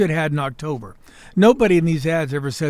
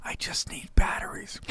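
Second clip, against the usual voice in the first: hushed, very quiet, prayer-like whisper. Describing shoppers at Target before Christmas: imitating whispering shoppers.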